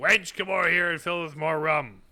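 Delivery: rough, rowdy sailor voice, yelling. Reading game text where a rowdy seaman calls to the barmaid: rowdy seaman yelling. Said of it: "One of the rowdy seamen yells to the barmaid".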